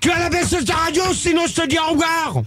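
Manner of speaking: high, furious, angry yelling.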